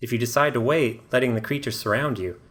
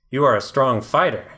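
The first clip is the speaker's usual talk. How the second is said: loud, raspy, rasping creature growl; 5 dB louder than usual. Voicing the underdweller leader speaking to the players: growling raspy voice. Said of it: "he growls in a raspy voice".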